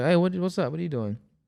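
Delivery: normal talking voice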